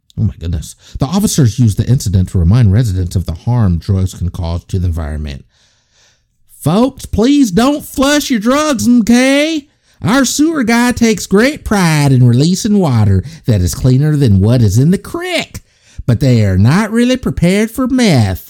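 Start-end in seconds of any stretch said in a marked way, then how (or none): 6.6-18.5 very high, swooping, put-on Tennessee accent. Reporting the officers' warning to residents about flushing drugs, in a tennessee voice. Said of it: "That's my Tennessee voice".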